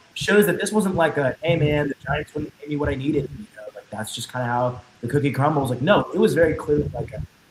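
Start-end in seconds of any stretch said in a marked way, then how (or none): none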